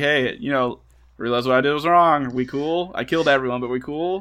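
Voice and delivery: computer-like voice. Retelling what Hal says before he is shut down: imitating Hal. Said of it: "trying to be like".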